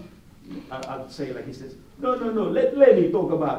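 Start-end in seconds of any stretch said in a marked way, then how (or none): 2.0-3.6 high, loud, bad Middle Eastern accent. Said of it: "my Middle Eastern accent is going bad there".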